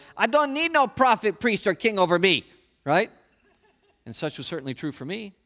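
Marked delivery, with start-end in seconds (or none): 0.2-2.5 put-on high, defiant toddler tantrum voice. A speaker mimics how all people reactively declare, in a mock two-year-old tantrum voice. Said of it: "in that tantrum voice of a two-year-old".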